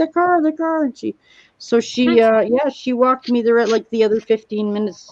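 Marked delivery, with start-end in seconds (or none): 0.0-0.8 put-on, high, scared, tearful sobbing scream. Retelling a scared answer to a woman who came out, imitating crying and screaming. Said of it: "I was crying and screaming at the top of my lungs".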